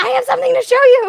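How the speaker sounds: very high, shrill, creaky, rough yell. Playing a character who runs at the conductor: yelling in character. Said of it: "just yell".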